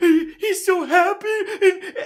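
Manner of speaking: tearful, very high blubbering, sobbing speech. Retelling how he answered a question while watching a video: imitating own sobbing. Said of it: "I couldn't stop crying".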